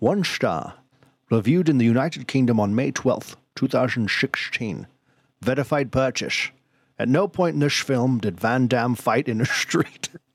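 put-on Scottish movie-star voice. Asked to read a one-star review aloud, doing a Sean Connery impression. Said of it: "read this in your best Sean Connery".

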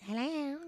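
put-on high, childlike phone voice. Showing how the speaker answers the phone, in a high childish voice. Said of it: "I talk really, like a really high childish voice".

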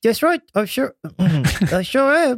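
very high-pitched voice with pursed lips. Answering a call for confirmation that everyone is ready, [name] talking with pursed mouth. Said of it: "this is [name] talking with a very pursed mouth".

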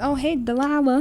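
put-on country accent. Retelling how someone greeted Delilah, in a Sandy Cheeks country accent. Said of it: "she was saying in a country accent".

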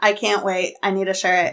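ordinary delivery

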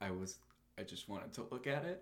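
put-on low, quiet deadpan. Recapping a scene to another speaker, imitating Honey, flat monotone. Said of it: "Honey just very monotone is like".

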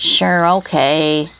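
low, uninterested. Benedict, answering an offer to help clean up his garbage pile, low and uninterested. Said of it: "Benedict said in a low, uninterested voice".

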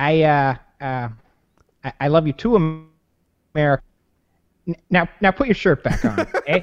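put-on Fargo-style accent. Playing Canada in a dramatic reading, answering America, in a Fargo accent. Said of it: "That's my Fargo accent".

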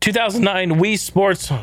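voice cracks mid-phrase, jumping up high. Listing party games by release year, the speaker's voice cracks. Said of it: "my fucking voice cracked there".

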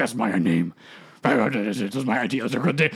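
deep monster voice. Recapping the story, giving Venom's line in Venom voice. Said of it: "I don't know why I'm doing that voice for Venom".

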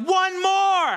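very high, loud shouting. Speaker quotes him pushing her past her limit for one more; retelling a shout. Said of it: "he shouts".

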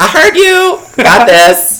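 shrill, very high, very loud excited scream. Acting out Vanna just after she won Survivor, do an inaccurate Vanna voice, mock-screaming. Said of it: "that's my Vanna voice".

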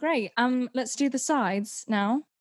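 put-on British English accent. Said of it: "he said it in a British accent".

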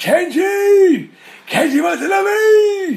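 high, loud yelling.

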